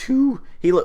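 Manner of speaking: voice cracking mid-phrase. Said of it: "oh my god, my voice".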